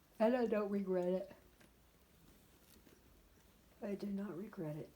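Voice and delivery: speaking through a yawn. Vlogging to the camera, speaker keeps talking: yawning while talking. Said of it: "Sorry, I'm yawning".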